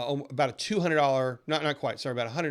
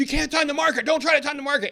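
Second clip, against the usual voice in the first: shrill, very high-pitched, loud screaming; 13 semitones higher, 6 dB louder than usual. Speaker imitates a radio financial planner screaming at listeners, imitating a screaming radio host. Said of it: "But he screams and he's like".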